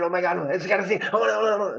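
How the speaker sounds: fast, rattled-off, overexcited babbling gush. Explaining restraint, the speaker demonstrates what not to do: fast and really excited. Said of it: "talk very fast and be like really excited".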